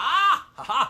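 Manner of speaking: all excited, high, loud yelp.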